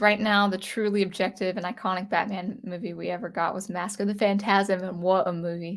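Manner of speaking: ordinary talk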